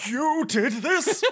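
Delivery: very high-pitched character voice. Game narrator voicing Tramel's reply after Titus speaks, in the Tramel voice. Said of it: "you have the Tramel voice".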